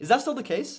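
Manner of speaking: genuinely curious upward rise ending on case. Demonstrating a question about an ad inquiry, curious rise on case. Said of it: "So upward inflection, right? Like truly curious".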